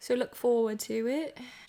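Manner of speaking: bad, fake, put-on British accent. Closing out a video to viewers, in a bad British accent. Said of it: "I don't know where that accent came from".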